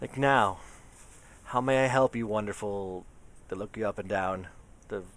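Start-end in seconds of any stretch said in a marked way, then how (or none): 0.2-3.0 audibly relieved, polite service voice. Voicing the receptionist greeting the party: visibly relieved. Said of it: "The receptionist is visibly relieved".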